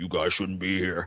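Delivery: very deep, low, heavy bass-register voice. Retelling what a woman getting out of the springs told them, imitating a very deep voice. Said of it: "this deeper voice than Hulk Hogan".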